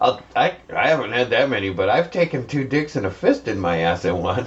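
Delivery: ordinary talk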